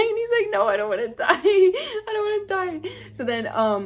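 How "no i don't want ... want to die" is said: play-acted, very high, tearful crying voice. Retelling what he said after being told he would die, imitating someone crying. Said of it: "we start like low-key crying".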